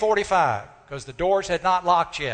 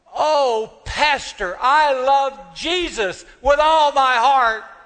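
clear, loud, raised, high voice; 8 semitones higher, 6 dB louder than usual. Retelling what a woman said to the pastor before they prayed, in a clear, loud voice. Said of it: "she said with a clear, loud voice".

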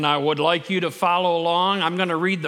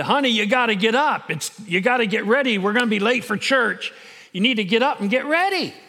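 put-on loud holler, calling out; 4 semitones higher than usual. Telling a story, a wife calls to her husband in bed: retelling a holler. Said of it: "she kept hollering to her husband".

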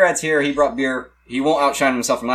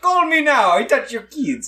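high, bad, put-on Irish accent, lilting; 9 semitones higher than usual. Redoing a Miss Cleo line with friends, the speaker slips: failed Miss Cleo impression. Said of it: "I went Irish. I went leprechaun there".

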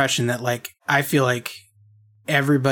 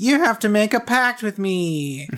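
put-on cutesy creature voice, higher; 9 semitones higher than usual. Retelling what Kyubey says to the girls: cutesy Kyubey voice. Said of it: "Kyubey with his little cutesy voice".

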